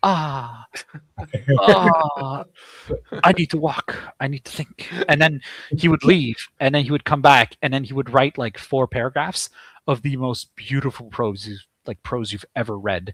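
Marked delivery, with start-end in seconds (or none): 0.1-4.9 slow, grand, very dramatic theatrical declaiming. Retelling a writing session, imitating a fellow writer: imitating someone speaking very dramatically. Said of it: "very dramatically going like".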